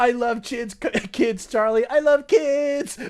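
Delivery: put-on cartoon character shouting. Quoting a cartoon scene line at the top of lungs: Pim yelling. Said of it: "yelling that at the top of your lungs".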